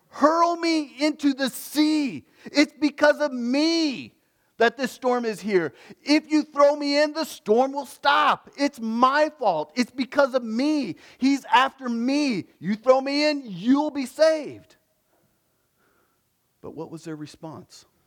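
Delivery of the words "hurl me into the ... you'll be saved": top-of-the-lungs high yell with me drawn out. Acting out Jonah on a storm-tossed ship deck: imitating Jonah yelling over a storm. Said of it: "he is yelling".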